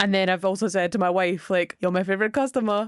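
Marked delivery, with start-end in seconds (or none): 1.8-2.9 put-on Austrian-accented movie-star voice. Recapping a movie, quoting the lead's line to his wife: Arnold Schwarzenegger impression. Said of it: "[name] was Arnold Schwarzenegger for every single impression".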